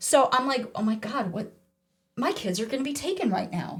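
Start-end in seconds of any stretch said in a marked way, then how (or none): 0.7-1.5 put-on panicked reaction. Retelling a panicked reaction to cop cars outside: imitating own panic. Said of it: "I'm freaking out".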